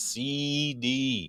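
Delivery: E vowels in C D punched hard. Describing someone's way of saying c d, with heavy stress on the e sounds. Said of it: "Like it's very a lot of E emphasis".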